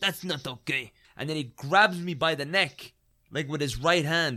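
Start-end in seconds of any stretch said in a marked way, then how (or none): 0.0-0.9 put-on heavy, laid-on Eastern European accent. Retelling a confrontation, quoting what a man said in a thick Eastern European accent. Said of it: "in this, like, thick Eastern European accent".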